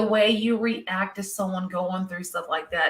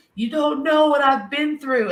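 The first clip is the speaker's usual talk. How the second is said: high, loud sobbing and wailing bawling scream; 7 semitones higher, 6 dB louder than usual. Retelling how a man screamed at a cop outside; imitating someone screaming and crying. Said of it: "screaming, bawling, crying".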